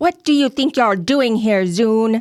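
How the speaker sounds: very loud, high, confrontational shouting. Tabletop player's character confronting Zune before attacking, yelling. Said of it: "I'm going to yell again".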